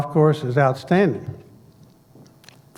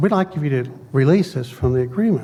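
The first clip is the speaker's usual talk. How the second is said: ordinary talk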